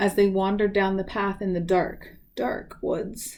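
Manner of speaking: plain reading voice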